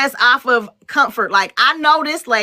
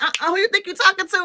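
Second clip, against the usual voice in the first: sassy, pitched-up, high delivery; 7 semitones higher, 3 dB quieter than usual. Imitating the old Aunt Viv from Fresh Prince: sassy Aunt Viv impression. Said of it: "the old Aunt Viv was sassy".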